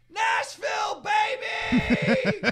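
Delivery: very high, shrieking, shouted mock scream. Retelling how a man screamed near airport security: retelling a scream. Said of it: "and he screams".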